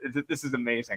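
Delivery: talking through laughter. Talking with others about a lookalike actor, laughing while talking. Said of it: "I'm just laughing so much to myself right now".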